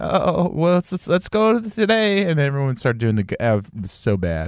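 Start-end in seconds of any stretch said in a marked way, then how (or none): 0.0-2.2 mock nervous bleating goat-like voice, higher. Retelling how a college professor talked: imitating her nervous, goat-like talk. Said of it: "she had, like, a nervous talk".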